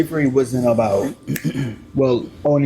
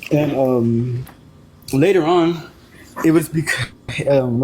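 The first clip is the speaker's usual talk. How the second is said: nervous, halting stammer full of fillers. Sharing a question about faith with a listener, nervous stuttering. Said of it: "sorry, I'm stuttering. I'm kind of nervous".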